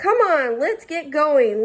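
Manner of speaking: bossy, domineering voice. Reading a story aloud, voicing Lucy urging the kids on: bossy voice. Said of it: "Lucy said in a bossy voice".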